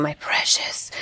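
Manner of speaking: muttering quietly. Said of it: "I'm going to hear him muttering".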